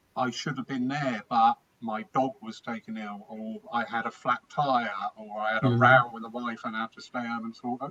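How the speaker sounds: plain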